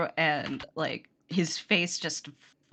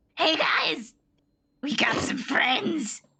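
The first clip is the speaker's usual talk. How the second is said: put-on high goblin voice, calling out; 8 semitones higher than usual. A goblin shouts to the others as you open the door, in a goblin voice. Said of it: "I gotta get my goblin voice back on".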